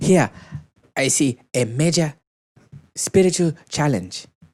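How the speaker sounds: put-on Nigerian accent. Reading out quoted Twitter posts to a co-host, imitating a Nigerian accent. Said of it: "That's a really good Nigerian accent".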